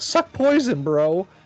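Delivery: loud, high, play-acted jeering taunting yell. Recapping the fight where a character yelled a taunt: retelling a yelled taunt. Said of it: "came up behind him and yelled".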